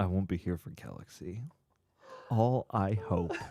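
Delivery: mock, fake deathbed dying-wish tone. Reading a viewer's message aloud as if it were a dying wish: mock dying-wish tone. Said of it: "Read it in that tone".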